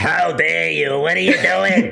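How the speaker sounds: put-on elderly lady voice. Invited to voice a woman character in the game, speaking in old lady voice. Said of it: "You just did an old lady voice, so I did an old lady voice".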